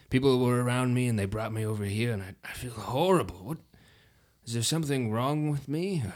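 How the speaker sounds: put-on elderly voice, worn right out and exhausted. Just revived after blacking out, the aged tiefling speaks to those around him: suddenly aged tiefling voice. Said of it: "really old tiefling that you hadn't seen on the boat this whole time. But then, as you're looking at this person, realize it's [name], and he looks now to be over 80 years old. / and he looks now to b".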